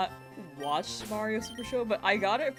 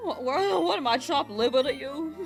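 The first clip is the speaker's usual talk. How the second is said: ordinary talk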